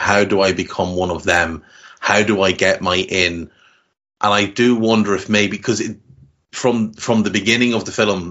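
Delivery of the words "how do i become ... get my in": usual speaking voice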